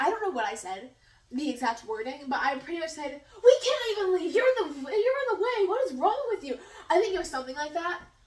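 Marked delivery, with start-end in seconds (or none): 3.4-6.6 mock, rude, high-pitched yelling. Retelling yelling back at the woman blocking the exit: imitating own yelling back. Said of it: "I start yelling back at her".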